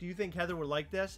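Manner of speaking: plain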